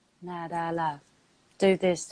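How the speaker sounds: deep, level, unbothered, bored half-whisper. Showing how the higher self sounds, quiet, bored, calm voice. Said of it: "the higher self will sound real bored and calm".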